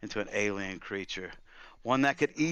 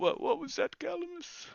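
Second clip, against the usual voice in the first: mock, very high, sniffly, tearful voice. Retelling a character's reaction, mimicking sniffling speech. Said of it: "he's sniffling".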